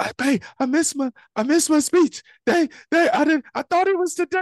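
mock frantic, rushed, very high panicked scream. Retelling rushing into the house after missing a speech: imitating his own panicked scream. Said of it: "I scream".

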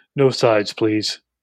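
weird, odd, dropped, deep put-on voice. Retelling a dinner date, quoting the tiny goth girl: imitating a weird deep voice. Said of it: "she had this weird deep voice".

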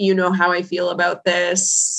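heavy, thick put-on Ukrainian accent. Retelling what she finally said when she called: thick Ukrainian accent. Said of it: "in her thick Ukrainian accent".

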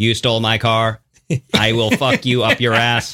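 robotic, automated car voice. Joking about a stolen car that talks: automated car voice. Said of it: "an automated thing that says".

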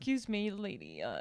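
put-on mimicked British accent. Retelling what a ride conductor at Universal said to her: imitating a British accent. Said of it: "And he had a British accent".

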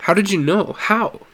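high, stammering, stuttering delivery. Asked by his mother about Jimmy, he answers her, stammering. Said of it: "he stammered".

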